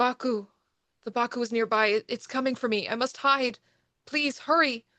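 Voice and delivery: frantic, panicked pleading full of desperate terror. Narrating to the players as an unseen Taniguchi-san calls out, Taniguchi-san in deep panic. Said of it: "you hear him say in a deep panic".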